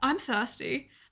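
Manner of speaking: put-on upper-crust posh accent. Trying out accents for a spoof drink ad, put-on posh accent. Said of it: "maybe I'll do the posh one".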